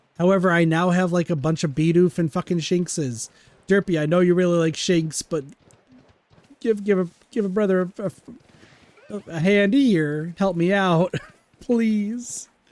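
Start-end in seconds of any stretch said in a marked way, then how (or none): 10.4-12.5 voice cracking, much higher, slower. Streamer asking someone for help while streaming: voice cracking. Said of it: "Voice crack".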